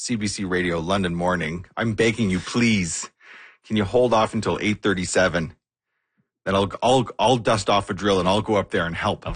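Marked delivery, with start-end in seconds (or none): none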